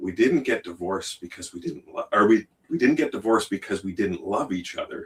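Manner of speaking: very calm, composed, measured, quiet and soft. Retelling a sister's reply at a family dinner: imitating a calm quiet voice. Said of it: "she said very calmly, in a quieter voice".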